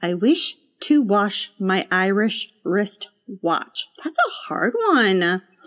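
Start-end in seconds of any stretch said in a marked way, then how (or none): 0.0-3.9 slow, careful, deliberate, drawn-out speech. Practicing a tongue twister, said slowly the first time through. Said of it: "I'm going to say it slowly first".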